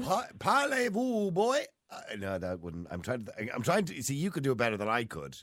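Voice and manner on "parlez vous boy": put-on French voice with Cork accent, much higher. Discussing a man who spoke little English, trying a French person with a Cork accent. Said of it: "a French person with a Cork accent".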